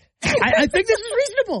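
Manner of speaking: high-pitched voice. Paraphrasing someone's earlier point on the show, in a high-pitched voice. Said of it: "You know how high pitched your voice just got?".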